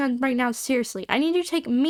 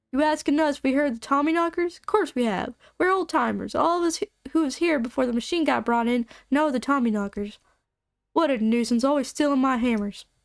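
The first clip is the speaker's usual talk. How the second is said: put-on southern-accented old-timer voice. Asked about knocking in the mines, the speaker voices an old-timer answering in a southern accent. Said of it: "Why am I doing a southern accent now?".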